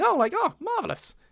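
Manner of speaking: very high, loud exclamation. Retelling a moment in everyday talk: Lucian voice slipping out. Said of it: "that was Lucian".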